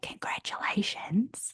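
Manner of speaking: soft, hushed little whisper. Retelling what a woman said over the phone, imitating a little whisper. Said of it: "in a little whisper over the phone".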